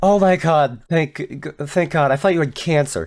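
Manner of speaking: complete, earnest, dead-sincere delivery. Retelling what a woman said to the speaker, imitating her complete sincerity. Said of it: "in complete sincerity".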